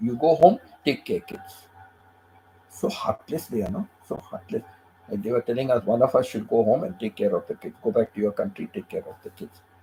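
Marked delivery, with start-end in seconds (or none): 0.0-1.7 choppy, halting, broken-English phrasing. Retelling what an official said to the couple: imitating broken English. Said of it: "Like that, he said".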